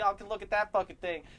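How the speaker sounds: very high, very loud, shrill shriek. Retelling how someone in a store kept yelling at the door: imitating someone yelling. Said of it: "she's still yelling at the door".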